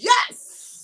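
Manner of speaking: high, excited inner cheer.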